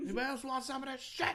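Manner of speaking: put-on yelling. Imitating a man who pushes his weed on everyone: imitating someone yelling. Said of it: "He's yelling at everyone".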